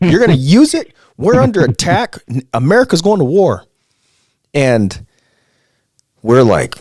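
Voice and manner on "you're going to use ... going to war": put-on angry screaming yell, higher and louder. Retelling a drill instructor bursting in with news: imitating an angry screaming instructor. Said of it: "But this guy's mad".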